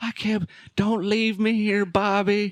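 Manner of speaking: put-on very high, frantic, freaking-out pleading. Retelling a story where a girl is left behind, acting out a girl freaking out. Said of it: "starts fucking tripping and like freaking out".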